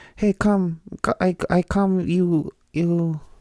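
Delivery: very slow, bad fake old Mexican woman accent. Trying out a fake foreign accent, sounding like the Family Guy cleaning lady. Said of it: "Is that an old Mexican lady accent that I'm giving".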